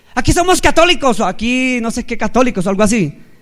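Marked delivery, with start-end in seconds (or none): 0.2-1.2 acted furious, resentful tone, high pitched. Speaker recounts a woman standing up after the prayer invitation, retelling an angry remark. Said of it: "pero con rabia".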